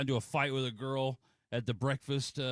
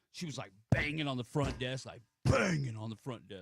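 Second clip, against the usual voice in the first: ordinary talk, nothing marked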